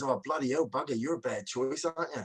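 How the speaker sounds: play-acted speech between bursts of laughter. Retelling what the bloke in the bunker said: imitating someone laughing while talking. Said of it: "And the guy's laughing, he goes".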